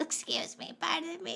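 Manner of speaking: put-on very slow, whispered, sweet little old lady voice. Retelling an old lady getting up in a theater: imitating a sweet old lady. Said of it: "It's very sweet".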